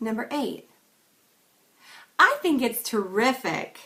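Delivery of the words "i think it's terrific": over-the-top exaggerated delivery, loud and swooping. Reading numbered example sentences for a tone exercise, exaggerated delivery. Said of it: "That one sounded exaggerated".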